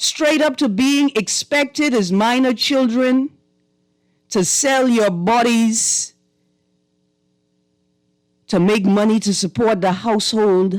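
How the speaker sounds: voice catching, cracking and breaking. Remembering real stories others shared: voice cracking with emotion. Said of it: "You hear that cracking in my voice?".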